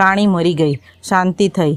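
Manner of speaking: plain reading voice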